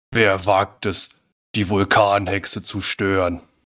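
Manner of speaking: low, deep voice of a giant witch. Game narrator voices a huge figure before the players, deep volcano witch voice. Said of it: "mit tiefer Stimme".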